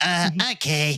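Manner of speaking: nasally put-on voice. Retelling a man's short reply, in his nasal voice. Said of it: "with his nasally ass voice".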